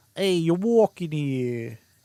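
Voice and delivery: put-on New York street accent. Noting a New York accent crept into the mix, speaker does a New York accent. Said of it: "Somehow a New York accent got thrown into the mix?".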